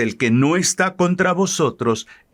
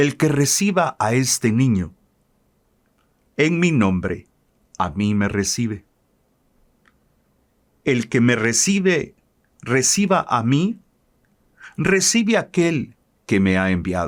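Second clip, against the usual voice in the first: slow, deliberate, unhurried, reflective reading aloud. Speaker re-reads a Gospel passage aloud for listeners at home: reading more slowly. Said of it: "de una manera más despacio".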